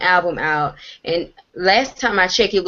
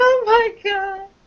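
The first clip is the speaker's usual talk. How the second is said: very high wailing, sobbing cry; 14 semitones higher than usual. Retelling how people reacted to someone going to rehab: imitating someone crying. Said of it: "They just cried like".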